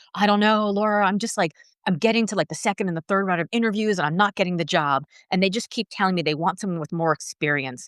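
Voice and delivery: ordinary talk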